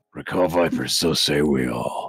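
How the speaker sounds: very low, heavy voice. Doing an actor's voice after being asked: Edward James Olmos voice. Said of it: "I can do Eddie's voice if you want me".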